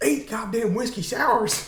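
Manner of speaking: very high, raw, acted yelling rant. Retelling a scene alone in the dressing room: imitating someone yelling.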